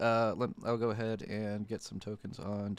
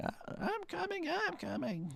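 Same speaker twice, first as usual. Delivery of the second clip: put-on high, swooping elderly woman's voice; 4 dB quieter than usual. Game narrator voicing a woman calling from inside a house, old woman voice. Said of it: "the old woman going".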